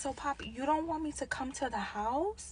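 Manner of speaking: put-on hushed baby voice. Retelling how she answered a man about the house key, in her baby voice. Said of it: "I went into my baby voice".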